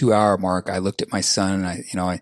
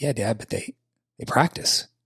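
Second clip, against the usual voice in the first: casual, offhand, unbothered, nonchalant tone; 3 semitones higher, 4 dB quieter than usual. A father retells the reply his son gave him: imitating son's nonchalant remark. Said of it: "my son just very nonchalantly says".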